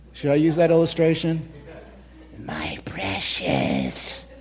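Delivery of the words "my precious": breathy, whispered creature voice. Illustrating a point to an audience with Lord of the Rings: Gollum voice. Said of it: "Like we're Gollum from Lord of the Rings".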